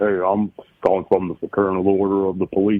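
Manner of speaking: put-on big, burly Southern accent, cop voice. Retelling a scam call from a telemarketer: imitating a burly Southern cop. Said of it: "I loved your impression there".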